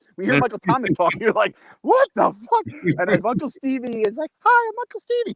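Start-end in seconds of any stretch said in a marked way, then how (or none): 4.4-5.4 very high, squeaky cartoon voice. Imagining how a feared man would introduce himself, in a Mickey Mouse voice. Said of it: "talks like Mickey Mouse".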